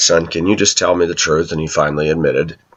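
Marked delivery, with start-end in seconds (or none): none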